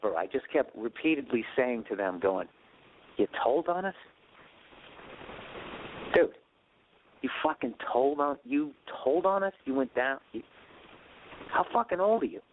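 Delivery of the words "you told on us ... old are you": mock drunken near-whisper. Recalling confronting three people who told on them, retelling a drunken near-whisper. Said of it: "almost at a whisper".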